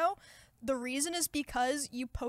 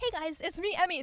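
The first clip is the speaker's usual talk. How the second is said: higher-pitched presenter-style intro reading voice; 5 semitones higher than usual. Showing how the voice rises when doing reads, higher read voice. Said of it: "my voice gets higher".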